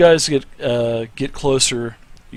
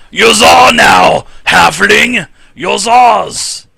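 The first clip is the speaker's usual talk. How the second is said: gruff yell, very loud, very slow and drawn-out; 9 semitones higher, 8 dB louder than usual. A game master voicing a figure up ahead addressing a halfling, in a rough voice. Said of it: "you hear a rough voice say".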